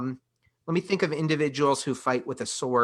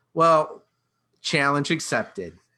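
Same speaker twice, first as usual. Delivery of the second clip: ordinary delivery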